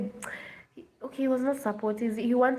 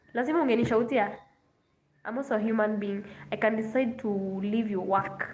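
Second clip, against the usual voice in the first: plain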